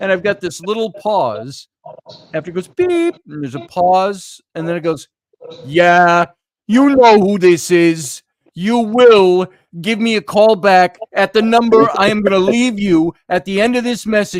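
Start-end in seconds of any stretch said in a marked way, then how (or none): 5.6-14.4 put-on loud Boston accent. Retelling a voicemail message heard on the tape, in a boston accent. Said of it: "he had the Boston accent too".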